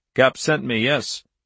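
usual speaking voice

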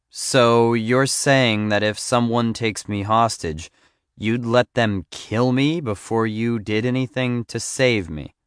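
plain

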